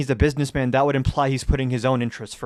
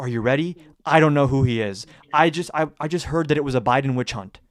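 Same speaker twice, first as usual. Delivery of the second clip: ordinary talk, nothing marked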